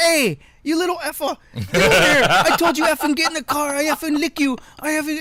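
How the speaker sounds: very high, shrill, loud yelling. Retelling what parents in town said to their kids: imitating a swearing parent. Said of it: "the parents turn around and say".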